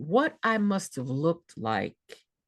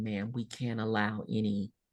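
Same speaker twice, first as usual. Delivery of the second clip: soft, slow, gentle, tender, reassuring delivery; 5 semitones lower, 5 dB quieter than usual. Retelling how a nurse refused the slippers she brought; imitating a gentle nurse. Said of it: "the nurse very gently said".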